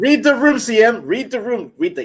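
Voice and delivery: loud, high-pitched yelling. Yelling at a co-host who spoke over someone else. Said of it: "why y'all yelling at me?".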